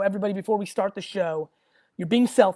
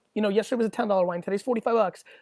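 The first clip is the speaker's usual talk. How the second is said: ordinary delivery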